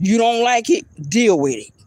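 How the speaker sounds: said loudly. Retelling a loud reply to a man who criticized a hat: retelling saying it loudly. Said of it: "I said it very loud".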